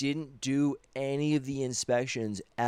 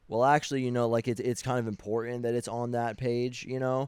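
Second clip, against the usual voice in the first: plain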